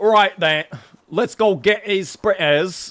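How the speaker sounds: poorly done fake British accent. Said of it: "fake and poorly imitated British accent".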